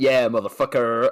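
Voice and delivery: put-on full American accent. Retelling how Danny delivered a line in a scene: imitating Danny's American accent. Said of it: "does that like full American accent".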